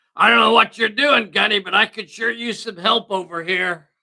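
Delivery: put-on yelling. Voicing Stan calling to Gunny for help: Stan yelling out. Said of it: "Stan over here yells out".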